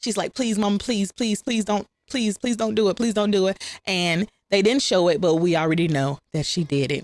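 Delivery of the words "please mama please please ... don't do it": put-on hysterical, tearful, pleading crying voice. Retelling a scene where a girl begs her mother: imitating hysterical crying plea. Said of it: "Penny is hysterical. She's crying".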